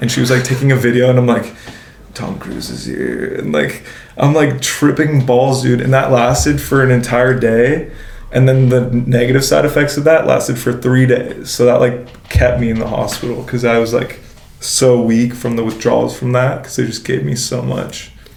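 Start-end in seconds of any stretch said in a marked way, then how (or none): 2.1-3.3 low, slow hushed whisper. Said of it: "I'm whispering this to my girlfriend".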